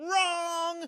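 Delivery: put-on, very high, snapping, drawn-out rage scream. Discussing the movie scene where the villain snaps on the boat, imitating Lex Luthor screaming. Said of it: "he snaps and he screams and he goes".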